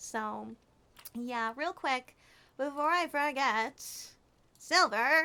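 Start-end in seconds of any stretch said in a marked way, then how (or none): 1.6-5.2 vintage newsreel announcer. Thanking a viewer for four gifted subs, in an old-timey news reporter voice. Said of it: "I don't know why I sound like a uh, an old timey news reporter".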